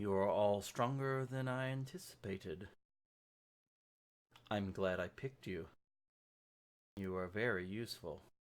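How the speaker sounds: gentle, serene, soft, very calm voice. Narrator voicing the orb heard directly in everyone's mind, soft, very calm orb voice. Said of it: "that soft, very calm spoken voice of the orb".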